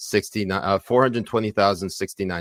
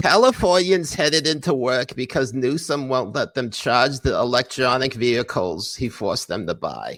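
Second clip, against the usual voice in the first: put-on nerdy dork voice, much higher; 5 semitones higher than usual. Reading a line of text aloud in a put-on nerdy dork accent. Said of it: "when you do that accent".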